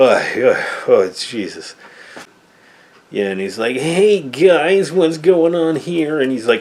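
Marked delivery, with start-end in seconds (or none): 3.8-6.2 high, slow, grating, annoying cheap puppet voice. Retelling a movie puppet character's line: imitating an annoying puppet voice. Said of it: "has the most annoying voice".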